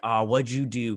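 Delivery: normal talking voice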